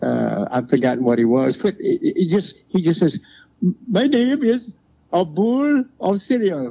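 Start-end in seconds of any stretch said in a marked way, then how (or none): 3.9-6.7 put-on Middle Eastern-accented voice, higher. Retelling a comedy bit where he suddenly does a Middle Eastern accent. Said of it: "had to do the voice of a Middle Eastern".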